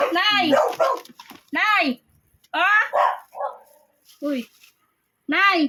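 loud, high-pitched calling out.

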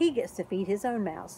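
ordinary delivery, nothing marked

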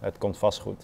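ordinary talk

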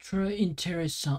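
clumsy botched French accent. Speaker tries a French accent and admits ruining it: failed French accent. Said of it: "I'm trying to do a French accent. I've ruined it".

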